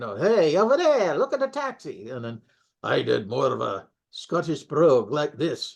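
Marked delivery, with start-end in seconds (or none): 0.2-2.1 put-on broad, animated Bronx accent, high and swooping. Recalling how a fellow performer voiced Jim Sock, Jim Sock Bronx accent. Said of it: "so he did a Bronx".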